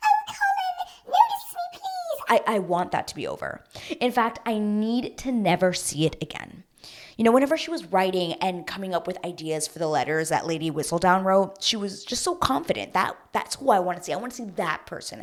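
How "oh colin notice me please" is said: nervous voice, very high and slow. Imitating Penelope talking to Colin: Penelope's super nervous high-pitched voice. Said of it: "that super nervous, high-pitched voice".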